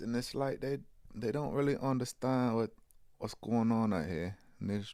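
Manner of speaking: put-on London accent. Imitating how female celebrities talk, in a London-sounding accent. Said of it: "You sound like you're from London".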